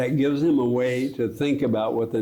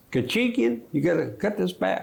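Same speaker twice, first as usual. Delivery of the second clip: put-on Texas drawl, raised pitch, vowels stretched; 8 semitones higher than usual. Retelling Jim Baker making a point to Kachigian when running behind schedule, in Jim Baker's Texas drawl. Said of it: "he'd do it in his Texas drawl".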